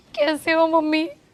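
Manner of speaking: speaking through tears. In a skit, a daughter greets her mother while crying as she speaks. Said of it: "तू ऐसे रोते रोते क्यों आ रही है".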